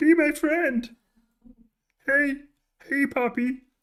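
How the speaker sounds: very high, loud, shrill froggy voice. Voicing a fruit fly that keeps flying in the face, Kermit-like voice. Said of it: "that sounds a bit like Kermit".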